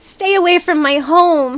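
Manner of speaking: tiny, very high shouted voice. Voicing someone shouting from a window above: small voice shouting. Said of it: "you hear a small voice shouting".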